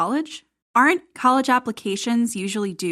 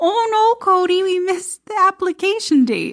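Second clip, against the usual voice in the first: very high-pitched put-on Wisconsin accent; 10 semitones higher, 4 dB louder than usual. Act out Robin telling Cody about a missed application date, in a Robin voice, put-on Wisconsin accent. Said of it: "I don't know what kind of accent that was".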